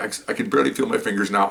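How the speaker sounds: ordinary talk, nothing marked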